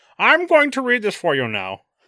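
loud villain voice, pitch swinging widely. Retelling how Bane announced he would read the speech: Bane voice. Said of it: "Bane was like".

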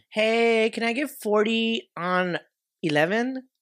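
acted high feminine voice. In a skit asking for gas at the pump, pretending to be a girl. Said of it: "Let me pretend I'm a girl".

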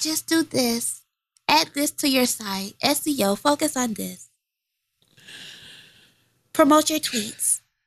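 put-on little girl voice, like a small kid. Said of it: "quit talking in your blue ivy voice".

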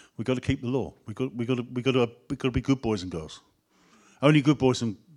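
normal talking voice

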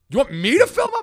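put-on outraged disbelief, very high and very loud. Retelling a complaint at a fast food counter: imitating dad sounding appalled. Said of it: "he was appalled".

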